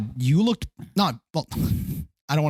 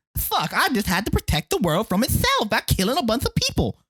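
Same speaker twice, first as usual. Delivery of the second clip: lisping character voice, a touch higher pitch; 7 semitones higher than usual. Imitating Samuel L. Jackson in Kingsman: Samuel L. Jackson lisp impression. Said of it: "That's Samuel L".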